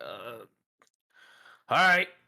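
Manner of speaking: slight stammer in the speech. Describing a game character's way of talking to the players: stammering a little. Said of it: "He just like s- stammers a little bit".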